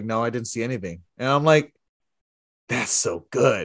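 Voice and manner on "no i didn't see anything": put-on deadpan, lower pitch and quieter. Recapping a SmackDown moment where Jay asks for backup; retelling Solo Sikoa's deadpan reply. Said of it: "Solo just like deadpan looks at James like".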